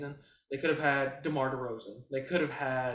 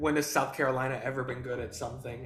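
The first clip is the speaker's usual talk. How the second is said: plain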